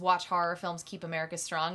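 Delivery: ordinary talk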